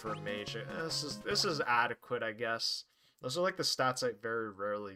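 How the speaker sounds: ordinary delivery, nothing marked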